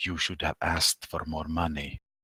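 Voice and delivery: low, hushed, private half-whisper. Leaning toward his ear from a safe distance, the character speaks in a half-whisper. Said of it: "lean in towards his ear and whisper".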